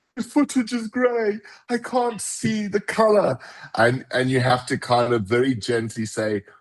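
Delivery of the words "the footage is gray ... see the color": very high-pitched, frantic, panicked delivery. Retelling how producers phoned about gray footage: imitating panicking producers. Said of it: "panicking because they're like".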